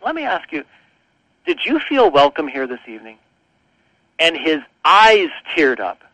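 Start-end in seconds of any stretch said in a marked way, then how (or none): 0.0-3.2 hushed, lowered, soft voice. Retelling asking an older guest a question as visitors left, in a lowered voice. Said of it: "I sort of lowered my voice".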